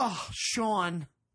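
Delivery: mock, put-on passive-aggressive tone of voice. Retelling what the laundry lady says at drop-off: imitating a passive-aggressive laundry lady. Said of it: "she's super passive aggressive".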